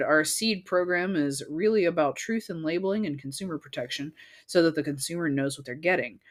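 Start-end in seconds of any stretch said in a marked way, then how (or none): none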